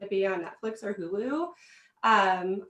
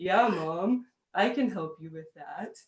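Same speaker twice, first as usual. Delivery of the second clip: put-on teen boy voice dropping deeper; 3 semitones lower than usual. Mom acts out her son in puberty offering help, imitating son's deeper voice. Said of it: "his voice gets a little deeper".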